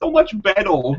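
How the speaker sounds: put-on high voice like a real little kid. Joking about how a review could have sounded: imitating a little kid's voice. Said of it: "talk like a real little kid".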